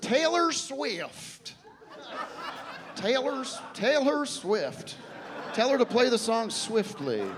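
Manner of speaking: put-on Southern accent. Retelling what a man told his companion to say: Southern accent. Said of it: "[Southern accent]".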